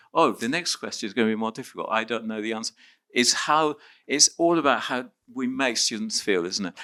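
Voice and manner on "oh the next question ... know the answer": soft, fast, worried inner voice. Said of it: "All the others are thinking".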